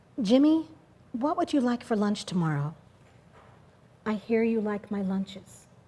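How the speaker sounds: very quiet, soft, hushed murmured voice. Quoting what a boy's mom said to him, in a real quiet voice. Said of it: "She says in a real quiet voice".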